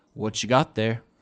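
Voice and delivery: even, neutral, flat, uninflected tone. Voicing a gray dwarf who walks over and asks a question, in a neutral tone. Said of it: "in a very like neutral tone of voice".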